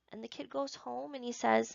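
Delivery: ordinary delivery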